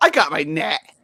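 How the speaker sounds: snide, dismissive, rude and snarky. Retelling what the friend said when asked about the net: imitating Joe, rude and snarky. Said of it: "like, all rude and snarky".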